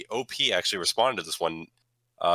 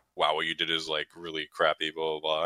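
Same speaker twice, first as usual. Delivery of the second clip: usual speaking voice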